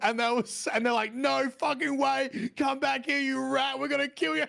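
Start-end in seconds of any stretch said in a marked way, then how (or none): 1.1-4.4 mock furious, high, rough angry screaming. Retelling how people reacted to him while making a video, imitating people screaming. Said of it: "people started screaming at me".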